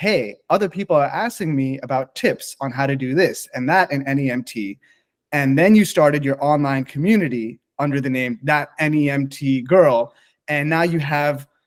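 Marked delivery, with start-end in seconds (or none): none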